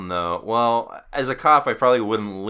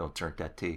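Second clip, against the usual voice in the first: very hushed, dead, emotionless monotone; 4 semitones lower, 14 dB quieter than usual. Retelling a scene where a kid speaks up to a cop, dead emotionless voice. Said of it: "that completely dead, emotionless voice".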